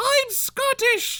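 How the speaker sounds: very high, furious angry shout. Imagining a friend shouting angrily from far off: imitating Maddie shouting angrily. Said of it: "And she's just mad at me".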